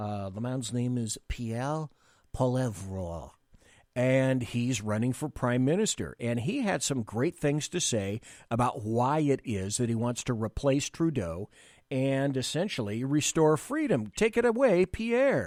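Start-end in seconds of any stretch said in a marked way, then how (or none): 0.3-3.3 deliberately bad put-on French accent. Introducing a clip of a politician, speaker tries a bad French accent. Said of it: "my worst, best French accent".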